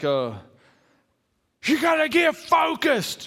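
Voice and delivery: acted fuming yell, very high, slow, drawn-out, swooping. Retelling how a man yelled at the speaker and friends, imitating a man yelling. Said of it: "he began yelling things like".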